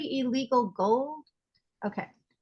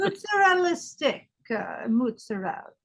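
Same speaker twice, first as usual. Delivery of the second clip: exaggerated Italian accent, pitched higher; 3 semitones higher than usual. Joking around with others, in a Godfather-style Italian accent. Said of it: "Why don't we always go to Italian accents?".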